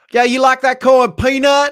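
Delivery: put-on weird Southern accent voice. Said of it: "that weird Southern voice".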